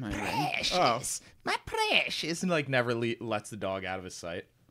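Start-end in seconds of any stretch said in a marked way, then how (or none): 0.0-2.4 very slow, high, swooping, sing-song creature voice. Joking that the dog's carrier acts like Gollum: Gollum voice. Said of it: "is like Gollum. He's like".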